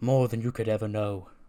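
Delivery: normal talking voice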